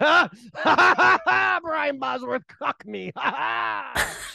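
very slow, high, laughing through every word. Imitating an actor who laughs after every line: Lance Henriksen impression, laughing through line. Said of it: "he just laughs his ass off".

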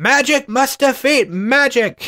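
put-on high, slow, insistent, adamant old-man cry. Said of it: "Uncle just keeps going".

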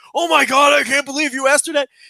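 put-on panic-stricken disbelief, high-pitched. Retelling the other speaker's reaction to the question: imitating someone panic-stricken.

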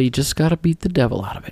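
quiet, soft, mild, low-key, easygoing, unfussy delivery. Recalling Bob Ross cleaning his paintbrush, the speaker does a Bob Ross impression, not loud. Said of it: "But he wouldn't say it so loud. He wouldn't say it with gusto. He would just say".

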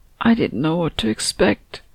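words croaked out in a croaking voice. A woman taking a glass from another woman's hand, croaked. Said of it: "croaked Anna".

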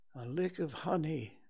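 soft, half-aloud musing murmur. Reading a story, a bear speaks to himself while an owl talks; murmured to himself. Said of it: "murmured Bear to himself".

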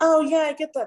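high, breezy, approving voice. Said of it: "people could have been like".

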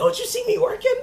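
shrill, very high-pitched, loud yell. Speaker retells a man yelling at her when she asked for help: retelling a yell. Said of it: "He yells at her and he was like".

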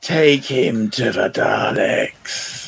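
dark, shadowed, husky voice. Recalling an episode, speaker quotes a character's line in a dark husky voice. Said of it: "that dark, husky voice".

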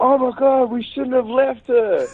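shrill, very high-pitched yell. Retelling charging toward her, the speaker repeats what they yelled: retelling a yell. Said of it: "I think I yelled out the first thing".

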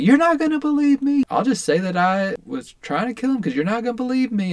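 high, loud, jaded, defiant, exasperated outburst.

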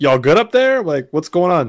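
loud calling, shouting. Knocking on the cockpit door with no response, yelling through a door. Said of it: "Just kind of like yelling through it".

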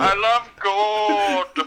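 put-on high, over-the-top Dutch accent, "gold" stretched long. Asked how Goldmember from Austin Powers sounds, a speaker does a Goldmember impression. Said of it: "How's his voice?".

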